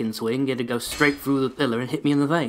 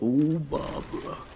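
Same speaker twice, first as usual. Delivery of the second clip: failed, unprojected put-on smooth voice, falling short; 4 dB quieter than usual.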